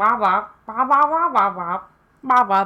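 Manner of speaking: loud, wobbling wah-wah adult voice. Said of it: "I'm like a Charlie Brown adult".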